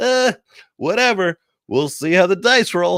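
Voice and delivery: put-on indifferent announcer voice. Imitating the TV voiceover announcer not caring about Santa: imitating an indifferent TV announcer. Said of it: "He's like".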